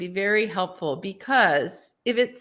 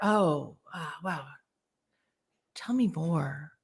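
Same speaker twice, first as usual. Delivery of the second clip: calm, open, lower, quieter, slower; 5 semitones lower, 8 dB quieter than usual. Advising how to answer someone fired up, the speaker demonstrates an open, calm manner. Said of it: "you go in a very open, calm manner".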